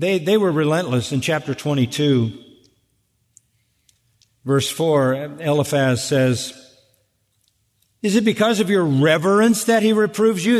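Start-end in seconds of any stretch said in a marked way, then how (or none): 8.0-10.6 thick, mocking sarcasm. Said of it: "That's sarcasm".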